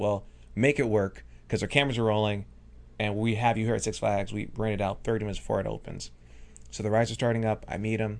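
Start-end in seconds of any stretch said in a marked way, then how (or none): none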